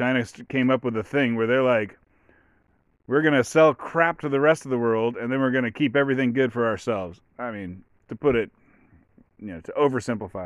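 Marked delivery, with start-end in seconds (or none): none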